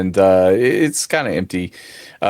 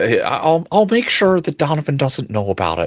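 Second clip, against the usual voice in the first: put-on high, swooping character voice in a changed accent; 7 semitones higher than usual. Voicing the manager character, who promises to keep it from Donovan: manager character in a new accent. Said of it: "What happened to his accent?".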